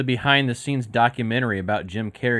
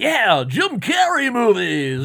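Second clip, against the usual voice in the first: play-acted, very high, swooping, full-pizzazz flourish; 12 semitones higher, 5 dB louder than usual. Retelling how a cohost announced the topic: imitating Alec saying it with pizzazz. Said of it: "come in with some pizzazz and be like".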